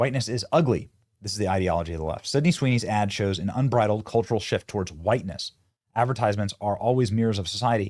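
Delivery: plain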